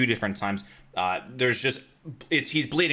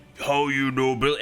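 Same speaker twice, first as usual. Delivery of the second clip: put-on ogre character voice; 3 semitones higher, 3 dB louder than usual. Voicing the ogre called Billy, turning when his name is said: Billy the ogre's voice. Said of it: "he turns, he's like".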